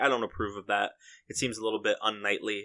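normal talking voice

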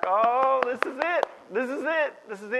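thrilled, eager, excited repeated exclamation. Retelling how a woman reacted to the news, acting out excitement. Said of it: "she gets all excited".

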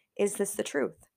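ordinary talk

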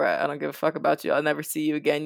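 ordinary delivery

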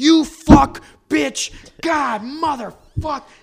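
very high, loud, mashed, garbled swearing spat out.

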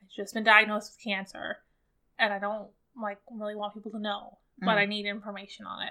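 ordinary talk

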